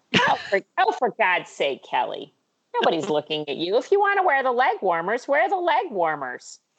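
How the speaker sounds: animated, swooping mom voice full of pitch swings. Doing an impression of her mom, as asked: Mary Corrigan impression. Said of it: "you do a Mary Corrigan".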